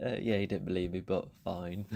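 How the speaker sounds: ordinary delivery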